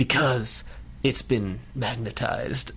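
mock, quiet, very mysterious line reading. Recapping a cartoon episode, quoting Professor X's line in a very mysterious tone. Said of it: "he says in a very mysterious tone".

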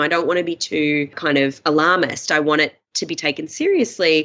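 plain

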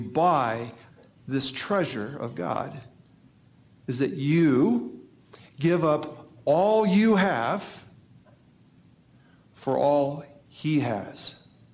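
slow, deliberate, carefully spelled out, you drawn out. Explaining a point twice to listeners so they really get it: said slowly. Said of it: "I'm going to say it slow".

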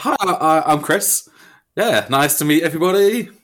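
weird, awkward presentation voice. Introducing yourself to the group when asked, in an awkward presentation voice. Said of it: "you did immediately change your voice into some weird guys".

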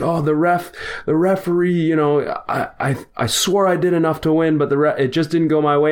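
high, weepy, tearful crying. Retelling a friend who lost in the bracket and blamed the referee, imitating crying friend. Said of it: "he's crying and he's like".

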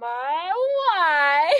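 put-on high, swooping Eastern European accent, my stretched. Retelling a man who kept repeating a bit during a loadout, Borat routine. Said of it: "he would just do the Borat routine".

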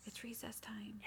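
very soft, very quiet, hushed voice. Showing the line that gets them silent at once: very quiet voice. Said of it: "in a very quiet voice".

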